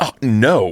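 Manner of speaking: put-on affronted, put-out, offended tone. Retelling an audience member's answer to a question: imitating an offended reply. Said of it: "Like, real offended".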